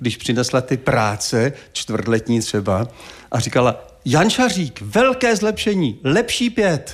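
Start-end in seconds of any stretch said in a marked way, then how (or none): 4.0-6.9 acted-out gleeful, jubilant, high-pitched proclaiming. Remembering the french teacher handing back tests: imitating a jubilant teacher. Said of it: "vždycky úplně jásala".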